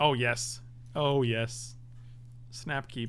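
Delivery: sarcastic tone. During a cube draft game, a player reacts to an opening hand, sarcastic. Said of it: "Your sarcasm is not wanted here".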